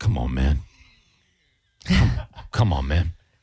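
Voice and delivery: put-on weary, worn-out, fed-up grumbling. Retelling a late-night fast food worker who was done with life: imitating a worn-out worker. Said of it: "I could tell the guy was just done with life".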